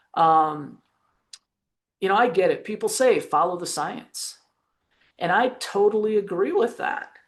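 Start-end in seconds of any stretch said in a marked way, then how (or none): none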